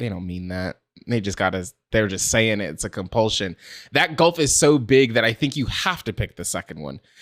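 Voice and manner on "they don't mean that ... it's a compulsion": low, soft, hushed skeptical tone. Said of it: "a person has to be like".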